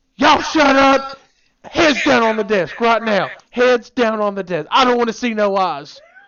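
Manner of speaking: very loud, shrill screaming voice. Retelling a teacher's outburst after a classroom fight: imitating a teacher screaming. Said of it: "Then she started screaming".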